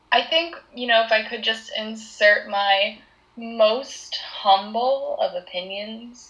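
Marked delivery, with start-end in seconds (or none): 3.3-5.1 most humble emphasized. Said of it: "emphasis on the most humble".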